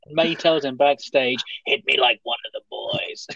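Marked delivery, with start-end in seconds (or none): 1.7-3.3 gravelly, raspy voice. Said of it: "I made her sound like she was smoking eighty a day".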